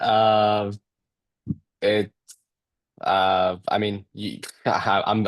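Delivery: stuttering, stammering delivery. Answering a question about the goal for the rest of the season: stuttering. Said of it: "I'm stuttering".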